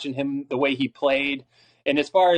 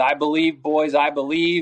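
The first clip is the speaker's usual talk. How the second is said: normal talking voice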